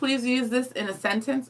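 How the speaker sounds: ordinary talk, nothing marked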